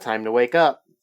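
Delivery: plain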